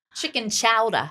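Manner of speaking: attempted Boston accent. Podcast hosts discussing a chicken chowder recipe; put-on Boston accent. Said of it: "I was trying to do a Boston accent".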